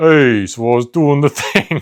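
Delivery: New York Italian wiseguy tough-guy accent. Comparing New York City accents, demonstrating another one; tough guy Italian accent. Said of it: "but like tough guy Italian".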